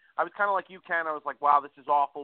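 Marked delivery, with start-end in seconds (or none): none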